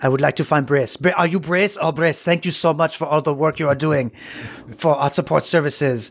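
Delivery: bad, imperfect French accent. Retelling what a man said, in a poorly done French-sounding accent. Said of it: "I'm not doing his accent well".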